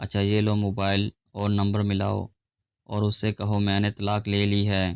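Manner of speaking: ordinary delivery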